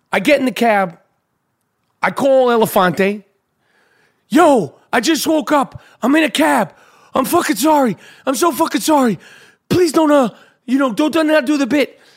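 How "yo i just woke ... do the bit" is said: put-on frantic, high, panicked voice. Retelling a phone apology for being late: retelling panicked apology. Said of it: "I'm literally in a fucking panic".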